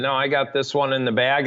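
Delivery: ordinary talk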